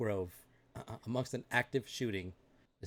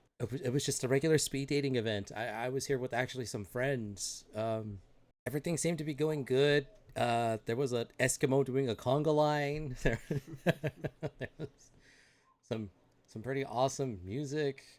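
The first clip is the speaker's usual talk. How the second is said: usual speaking voice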